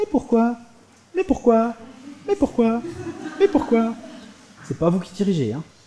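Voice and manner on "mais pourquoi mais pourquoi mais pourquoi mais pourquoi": put-on high, pestering child's voice, repeated why. Imitating children who keep asking why: imitating a child asking why. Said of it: "Il n'y a qu'à voir avec les enfants".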